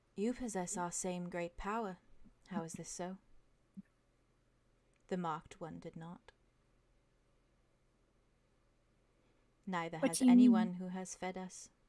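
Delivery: distant, eerie, echoing inner voice. Voicing a creature speaking into a player's mind: soft voice. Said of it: "you hear very softly in your mind".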